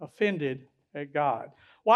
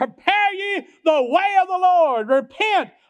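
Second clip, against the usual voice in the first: mock very high bellowing, hollering cry; 11 semitones higher, 5 dB louder than usual. Acting out a man crying out in the wilderness, retelling a hollering cry. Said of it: "He's crying out with the power of God in the wilderness".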